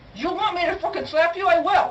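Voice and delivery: screaming. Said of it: "they're screaming like tards at each other".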